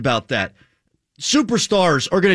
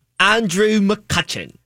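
put-on British accent; 3 semitones higher than usual. Going first as everyone takes turns saying a name, in a British accent. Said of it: "Everybody say Andrew McCutcheon in their best British accent".

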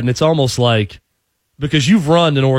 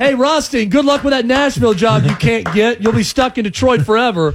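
play-acted shrill, very high, loud jeering call; 10 semitones higher than usual. Retelling a man taunting Rothstein about a job, imitating Paul's loud taunt. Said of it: "it was so loud in the way he said it".

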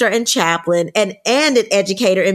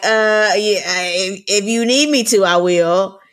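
reluctant, slow, hesitant, pausing, drawn-out delivery. Retelling how her husband answered the podcast invitation: imitating James, hesitant and pausing. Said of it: "he looked at me, he paused, and he was like".

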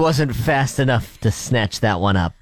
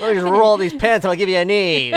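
put-on forties-movie menacing voice, pitched up; 5 semitones higher than usual. Joking that the other speaker's words sounded like a threat: mock 1940s-style threat. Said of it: "Some, like, nineteen forties threat".

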